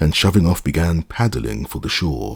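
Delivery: plain reading voice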